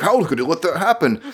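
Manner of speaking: high, dopey, put-on dim-witted voice. Recapping a fight scene and asking a question, in a dumb voice. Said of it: "I say all this with a dumb voice".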